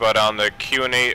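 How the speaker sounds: plain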